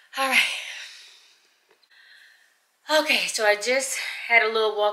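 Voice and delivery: winded, out of breath. Back from a long hike up, the speaker talks, out of breath. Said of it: "I'm out of breath".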